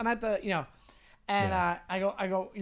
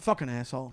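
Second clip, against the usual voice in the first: put-on mutter under breath, lower pitch; 8 semitones lower than usual. Retelling what a man said after being thanked: imitating a mutter under breath. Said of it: "under his breath".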